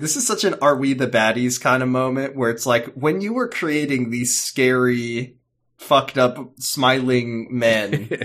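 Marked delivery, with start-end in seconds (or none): none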